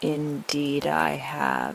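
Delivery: low, deep, growling bear voice. Narrator reads the bear answering the leopard, low, deep, growling voice. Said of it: "said the bear in a low, deep, growling voice".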